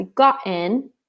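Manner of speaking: somewhat British pronunciation. Practicing a past-tense sentence aloud: kind of British accent. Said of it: "I'm saying it kind of British".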